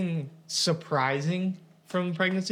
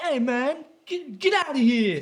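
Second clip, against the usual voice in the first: put-on New York Bronx accent with raised pitch; 8 semitones higher than usual. Explaining how New Yorkers talk, imitating a Bronx accent. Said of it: "people from the Bronx are like".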